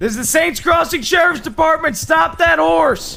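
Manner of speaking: very loud, high, commanding shout. Chasing a rider in a game, shouting as the sheriff's department: [name] yelling as a lawman. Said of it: "I gotta get my [name] yelling on".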